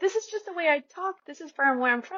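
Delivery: imitated loud talking. Retelling a guest on a podcast defending her loud way of talking: imitating a raised voice. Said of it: "she's raising her voice and she's like".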